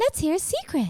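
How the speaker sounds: put-on very high babyish voice. Back from a break, trying out a new voice for the podcast: baby voice. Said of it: "Why are you talking like a baby?".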